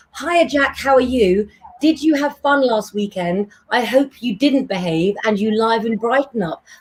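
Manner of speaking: ordinary talk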